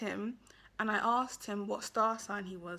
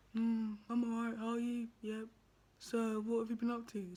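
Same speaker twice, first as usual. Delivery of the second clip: mock dead-straight, flat, monotone, bored delivery; 4 dB quieter than usual. Acting out a dull match's replies, imitating a monotone, bored voice. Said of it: "so straight, monotone in the voice".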